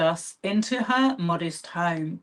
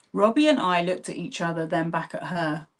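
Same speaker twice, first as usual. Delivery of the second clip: ordinary delivery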